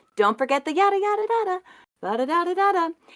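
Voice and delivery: very high, breezy, light, easygoing tone. Retelling a reminder given to him, imitating own high-pitched voice. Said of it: "My voice for talking to him is often, like, way up here".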